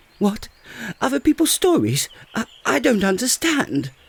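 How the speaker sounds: flustered, overexcited, very high excitable voice. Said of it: "you excitable little fellow".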